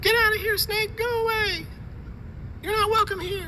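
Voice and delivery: silly put-on goofy voice. Recording a test clip for a voice-changer tutorial, in a funny voice. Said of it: "I know I was making a funny voice there".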